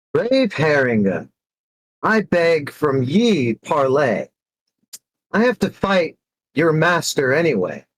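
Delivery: calling out at full voice, big and high. In a role-play, the speaker calls out to a foe before a fight, in a very loud voice. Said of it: "I'll say in a very loud voice".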